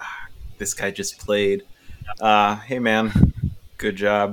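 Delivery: dutiful, perfunctory, throwaway tone. Retelling what people in the crowd say after a set: imitating obligatory praise. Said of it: "the obligatory".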